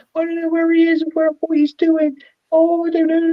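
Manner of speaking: play-acted very high, upset, tearful crying. Retelling a video of a woman who lost her boyfriend: imitating someone upset and crying.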